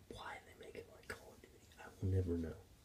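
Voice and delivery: very quiet, hushed, dramatic whisper. A video maker talking about a game, whispering for dramatic, funny effect. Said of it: "Why I'm whispering like this?".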